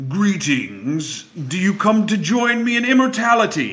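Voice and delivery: resounding voice with climbing pitch. Game narrator voicing a voice coming from every wall of the chamber, booming voice. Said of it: "you hear a voice booming".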